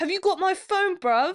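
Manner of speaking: brash, very high, full-volume chatter. Complaining about people talking during a film, imitating a loud cinema-goer. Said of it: "so we're allowed to do this voice".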